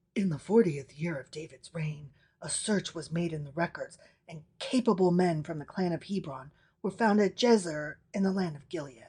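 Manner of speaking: very quiet, low, hushed aside voice. Reading scripture aloud, the speaker voices the bracketed text: parentheses voice. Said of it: "This is all parentheses voice now".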